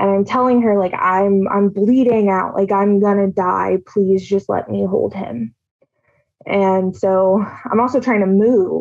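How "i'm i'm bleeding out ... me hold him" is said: put-on desperate pleading tone. Retelling being held at knifepoint and begging to hug a son: retelling own begging. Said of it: "I just start begging her".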